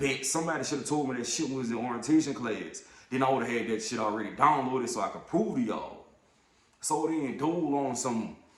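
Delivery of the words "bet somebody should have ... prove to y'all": ordinary talk, nothing marked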